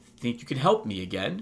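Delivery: plain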